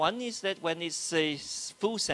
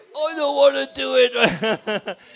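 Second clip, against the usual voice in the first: put-on very slow, dragging, raised old man voice; 8 semitones higher, 13 dB louder than usual. In a voice exercise, asked how an old man would say it, using an old man voice. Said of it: "How would an old man say it".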